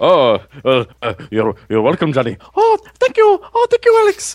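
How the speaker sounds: comic voice, stammering, swooping all over pitch range. Answering a podcast thank-you as Robin Williams: Robin Williams impression. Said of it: "a Robin Williams impression".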